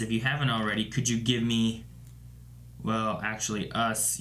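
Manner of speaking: usual speaking voice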